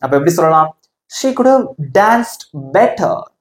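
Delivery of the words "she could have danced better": better pressed hard, raised and louder. English lesson on sentence stress: stress on better. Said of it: "Better அதை மட்டும் கொஞ்சம் அழுத்தி சத்தமா சொல்லலாம்".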